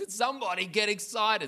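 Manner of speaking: put-on passionate disgust. Retelling a man who stood up mid-service: retelling a passionate, disgusted outburst. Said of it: "So much passion and disgust in one sentence".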